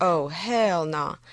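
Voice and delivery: put-on Texan drawl. Voicing someone's reaction as your own translation: Texas drawl. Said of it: "I'm only translating with a Texas drawl".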